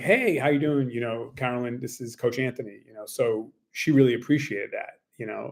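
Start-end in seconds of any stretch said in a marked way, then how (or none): none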